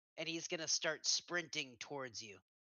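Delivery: ordinary delivery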